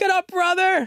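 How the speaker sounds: loud, enthusiastic cheering voice. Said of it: "Merab cheering for his brother".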